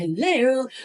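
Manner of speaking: put-on posh voice. Showing the telephone voice she puts on: posh telephone voice on hello. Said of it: "I do my mum's telephone voice and I sound".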